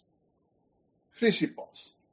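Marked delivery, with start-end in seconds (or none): 1.2-1.9 dimitri pronounced like a modern Greek speaker. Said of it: "the way it would be said in modern Greek pronunciation".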